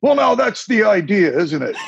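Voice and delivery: bad, thick, laid-on put-on Scottish accent. Speaker retelling what the cardiologist said while they signed, bad thick Scottish accent. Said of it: "in a very thick Scottish accent, which I'm terrible at".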